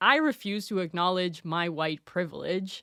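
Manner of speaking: ordinary talk, nothing marked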